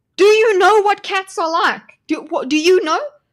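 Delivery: shouting. Reacting to a video of a cat at a birthday party: yelling. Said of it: "I know I'm yelling".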